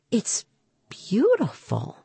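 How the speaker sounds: soft murmur full of wonder and admiration. Reading a story, Mom speaks while gazing at her child's cape, murmured. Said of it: "she murmured".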